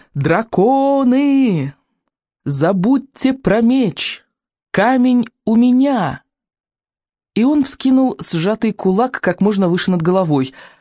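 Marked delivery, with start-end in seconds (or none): 0.2-6.3 very slow, stretched, drawn-out yell. Iking shouts to the dragons, raising his fist high; yelling. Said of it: "заорал Икинг".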